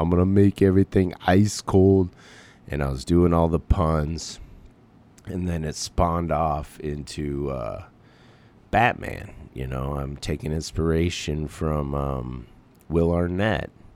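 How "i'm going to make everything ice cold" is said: bad put-on Austrian accent, loud and booming. Recalling playing Mr. Freeze for his son, the speaker does a terrible Schwarzenegger impression. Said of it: "Terrible Schwarzenegger".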